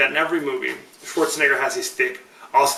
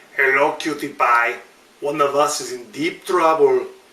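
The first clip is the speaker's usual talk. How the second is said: deliberately awful put-on action-hero tough-guy voice. Ending the show with an out-of-context quote: Arnold Schwarzenegger impression. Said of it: "That's my horrible Arnold Schwarzenegger impression".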